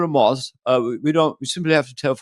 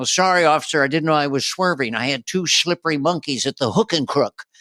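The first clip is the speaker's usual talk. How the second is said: put-on drunk talk-show host voice. Doing an impression of someone pulled over for drunk driving: Johnny Carson voice, drunk. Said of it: "I did Johnny Carson getting pulled over for drunk driving".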